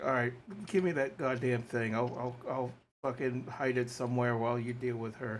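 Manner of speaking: spoken with a sigh. A player says what he would say in the scene, sighing. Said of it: "I would probably sigh and be like".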